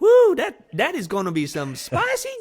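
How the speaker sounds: very high, very loud put-on Cajun accent. Describing a man from louisiana cooking crawfish, quoting him in a put-on cajun accent. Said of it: "He has a French Cajun accent".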